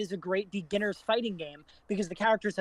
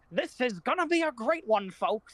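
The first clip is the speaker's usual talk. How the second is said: high-pitched fighting game announcer voice; 5 semitones higher than usual. Describing how a match starts in a favorite game, in the ClayFighter announcer voice. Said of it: "the announcer goes".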